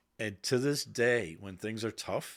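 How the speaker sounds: plain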